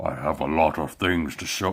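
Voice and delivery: low, deep, put-on Scottish accent. Trying to practice a Pinhead voice that slips: Sean Connery impression. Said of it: "That's Sean Connery".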